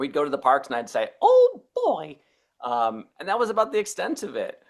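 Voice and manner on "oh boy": very high and very loud delivery. Recalling doing an impression at the parks: Mickey Mouse voice. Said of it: "I was just doing an impression".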